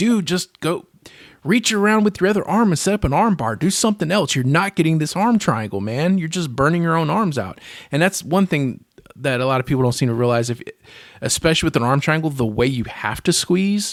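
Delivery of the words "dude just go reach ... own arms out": mild, pitched-up put-on yelling. Retelling what was shouted at the tv: imitating own past screaming. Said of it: "I was screaming at the T V like".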